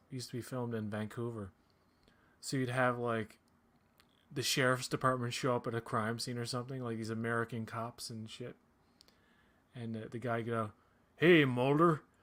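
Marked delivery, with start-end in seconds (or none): 11.1-11.9 put-on booming, loud, heavy, hardcore backwoods Canadian accent. Retelling a sheriff's department cop greeting mulder on set, hardcore backwoods canadian accent. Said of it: "such a hardcore like fucking backwoods Canadian accent".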